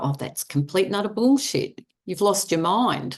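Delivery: ordinary talk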